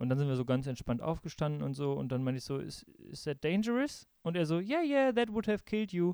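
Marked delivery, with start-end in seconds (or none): 4.6-6.1 put-on laid-back, relaxed, casual, easygoing, slightly high voice. Retelling an older man's answer to the speaker's question, imitating a totally relaxed man. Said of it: "Die sind völlig entspannt".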